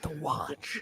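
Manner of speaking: hushed soft delivery. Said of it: "half the time the mic doesn't pick up the whisper".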